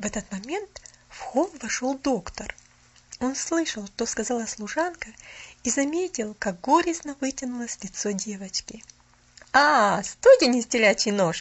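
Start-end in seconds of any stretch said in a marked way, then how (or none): 9.5-11.4 warm, welcoming, raised, friendly exclaiming voice. Reading the doctor's line as he comes up to Pollyanna, a friendly exclamation. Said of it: "приветливо воскликнул он".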